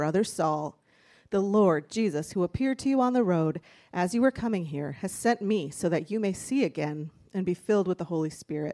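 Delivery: normal talking voice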